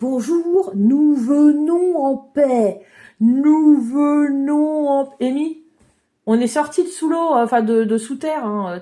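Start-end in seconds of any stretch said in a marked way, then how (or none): 0.0-5.3 speaking very slowly, like slow motion. Greeting a strange creature in the game: talking in slow motion. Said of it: "T'es pas obligé de continuer à parler au ralenti".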